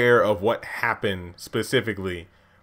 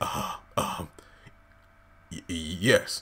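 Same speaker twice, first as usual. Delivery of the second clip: put-on hesitation, lower, quieter, much slower; 4 semitones lower, 7 dB quieter than usual. Retelling Andrew's answer when asked if he is ready to be cleansed, acting out a hesitant reply. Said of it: "Is that hesitation in your voice".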